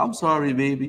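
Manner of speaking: put-on elderly woman's way of talking. Retelling what an older woman said, imitating old-lady talk. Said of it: "You know how old people talk".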